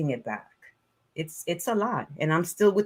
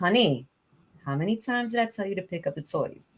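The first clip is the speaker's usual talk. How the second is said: patient, restrained, holding back; 2 semitones higher than usual. Demonstrating a way to tell him to pick up the toys, holding back. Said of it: "holding that back a little bit".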